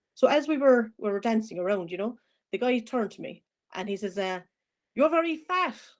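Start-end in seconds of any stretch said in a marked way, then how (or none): 5.0-5.8 put-on high-pitched Irish accent. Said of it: "So with the Irish accent".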